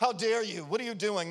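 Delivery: mock-angry, upset scolding outburst in man's voice. Retelling how the building's caretaker scolded the youth at the piano, mock-angry. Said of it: "he was getting all upset and angry at them".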